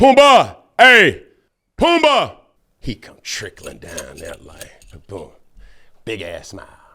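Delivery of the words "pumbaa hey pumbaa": shrill, loud, high, swooping sing-song dad voice. Recalling calling out for Pumbaa from the bleachers: put-on daddy voice. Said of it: "I had to put on my my daddy voice".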